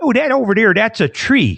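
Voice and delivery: put-on old-school Chicago cop accent. Retelling a longtime cop's answer to a question, in a Chicago accent. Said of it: "there's definitely a Chicago accent".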